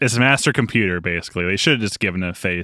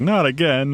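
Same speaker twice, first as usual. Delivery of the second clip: mock whining, higher; 6 semitones higher than usual. Retelling how a defeated character reacted: imitating whining. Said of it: "everyone's whining".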